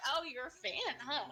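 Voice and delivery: put-on smug voice. Imagining Futaba teasing someone for being her fan: imitating smug Futaba. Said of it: "she gets so smug about it".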